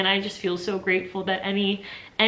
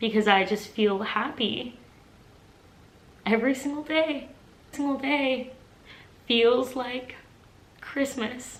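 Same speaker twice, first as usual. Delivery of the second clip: tearful voice, choking up, breaking mid-phrase; 4 semitones higher than usual. Speaker reflecting on their life now, crying while talking. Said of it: "I'm crying and I'm getting emotional".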